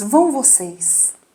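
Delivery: slow, gentle, very polite tone.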